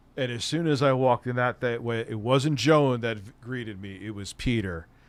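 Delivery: ordinary talk, nothing marked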